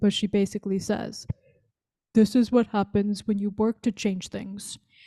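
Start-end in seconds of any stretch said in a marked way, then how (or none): 2.1-4.8 put-on voice, dropped lower and deeper. Quoting a woman's infamous comeback line, put-on deeper voice. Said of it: "Maybe I'll try to do a deeper voice".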